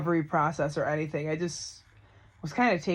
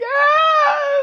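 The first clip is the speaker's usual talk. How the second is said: shrill, very loud, high sobbing crying wail; 13 dB louder than usual. Speaker retells answering a lady's question while crying: retelling own crying.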